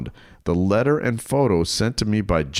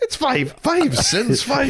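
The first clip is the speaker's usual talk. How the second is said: put-on Irish accent, higher pitched. Saying the dad line on request, as Conor McGregor impression. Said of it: "now do it as Conor McGregor".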